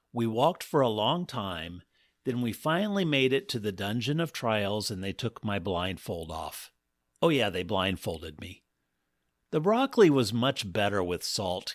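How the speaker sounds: plain reading voice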